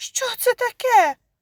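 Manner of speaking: very high, startled, frightened outcry. Reading a woman startled as she pulls the creature from under the table: frightened cry. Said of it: "злякано скрикнула вона".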